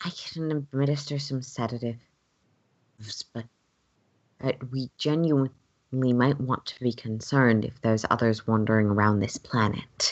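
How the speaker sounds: soft gentle voice. A character responds back in the scene, in a softer voice. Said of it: "in a um, sort of softer voice".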